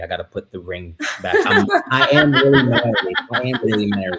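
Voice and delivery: laughing while talking, as an aside.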